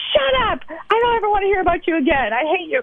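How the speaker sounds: mock high scream at full volume. Recounting a role-play exercise, acting out a furious outburst at a relative. mock yelling at the top of her lungs. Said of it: "she goes yelling at the top of her lungs".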